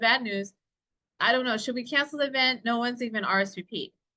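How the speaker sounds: usual speaking voice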